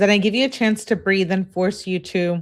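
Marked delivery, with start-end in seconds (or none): none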